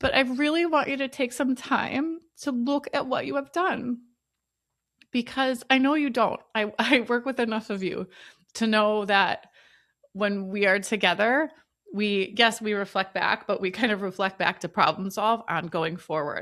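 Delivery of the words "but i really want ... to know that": choking up, tearful, high, near crying. Speaking to an audience, after admitting they're going to cry, on the verge of crying. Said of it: "I didn't need to cry".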